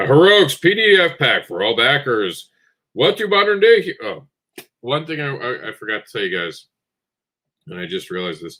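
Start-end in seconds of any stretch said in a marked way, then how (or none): 0.0-3.9 put-on announcer voice, high and slow. Announcing a PDF pack for all backers, in an announcer voice. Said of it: "Time for the announcer voice".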